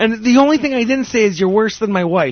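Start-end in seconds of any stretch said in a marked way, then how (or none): none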